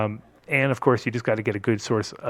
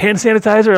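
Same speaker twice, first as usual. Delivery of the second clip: put-on very high, loud, frazzled, harried voice; 11 semitones higher, 13 dB louder than usual. Retelling a phone call with a distillery contact: imitating a stressed-out person. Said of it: "stressing out".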